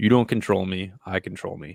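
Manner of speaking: put-on whisper. Retelling the mantra said during meditation: retelling a whispered mantra. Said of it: "I whisper".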